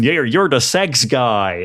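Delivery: mock yelling. Describing a show scene, quoting a character yelling at the Shonen; retelling a yell. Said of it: "just gets up and yells at the Shonen".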